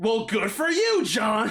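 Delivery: cross, angry, drawn-out tone with swooping pitch. Speaker retelling how one person answered another's comment, mimicking Steven's angry reply. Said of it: "with this angry tone".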